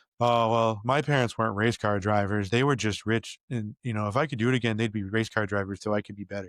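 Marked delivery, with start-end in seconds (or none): none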